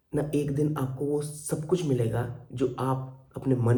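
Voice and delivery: ordinary delivery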